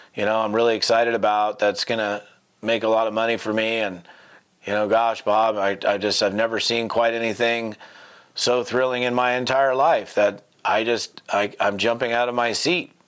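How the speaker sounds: deadpan, flat monotone with zero enthusiasm. Claiming to be thrilled while sounding unexcited: flat, unexcited delivery. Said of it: "that's so pathetic ... it doesn't sound to me at all like you're excited".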